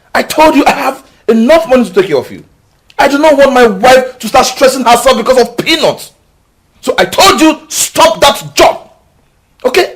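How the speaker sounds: screaming. A husband tells his wife to stop her job, shouting. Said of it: "Why are you screaming?".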